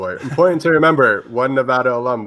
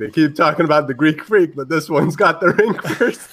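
sudden, high-pitched yelled shout; 6 semitones higher than usual. Describing a video, the speaker acts out what someone yelled: retelling a yell. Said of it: "JaVale basically yells something like".

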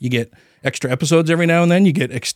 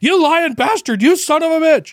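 enraged, shrill, very high-pitched furious screaming; 14 semitones higher than usual. Speaker reenacts yelling at the television while watching the news: retelling yelling at the TV. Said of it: "I'm just yelling at the television".

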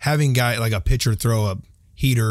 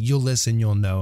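ordinary talk, nothing marked

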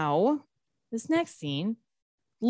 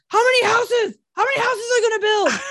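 mock furious outburst, higher and louder; 13 semitones higher, 5 dB louder than usual. Retelling a man flipping out about developers: imitating someone flipping out. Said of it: "flipping out".

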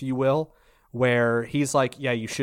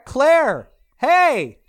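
shrill, swooping, high-pitched yell at full volume; 10 dB louder than usual. Calling out to a friend outside the window: yelling. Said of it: "Why am I yelling?".

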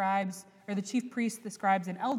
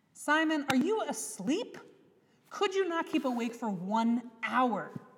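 disappointed, let-down, chiding, pitched-up tone; 5 semitones higher than usual. Retelling a rebuke to sleeping followers: imitating a disappointed Jesus. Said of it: "you hear and feel the disappointment in Jesus".

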